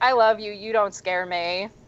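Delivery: smug, self-satisfied, taunting, needling tone. Retelling a woman taunting an angry man, mock-smug taunting. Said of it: "looking at him smugly and just being like".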